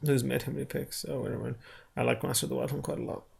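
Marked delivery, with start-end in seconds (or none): 2.0-3.2 weary, worn-out, tired, creaky delivery. Talking about picks with a co-host, tired voice. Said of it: "Why are you saying it in that voice?".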